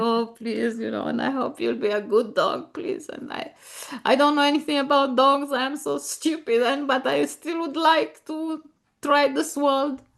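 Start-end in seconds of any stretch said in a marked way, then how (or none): 0.0-3.1 put-on sheepish, timid voice. Retelling first meeting the new dog: imitating own sheepish plea. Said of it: "So I go there sheepishly myself".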